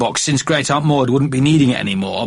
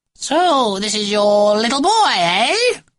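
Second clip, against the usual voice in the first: high, creaky voice like a creaking door; 9 semitones higher than usual. Reading a story, an old great-uncle greets the boy: high creaky voice. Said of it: "said a high, creaky door voice".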